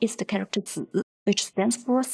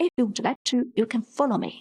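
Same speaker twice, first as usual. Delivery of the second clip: usual speaking voice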